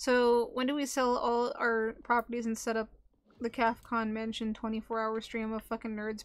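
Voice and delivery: plain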